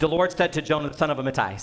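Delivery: rattled off very fast, breakneck pace. Showing how to say an Old Testament name, rattled off really fast. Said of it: "if you say it really fast, it sounds right".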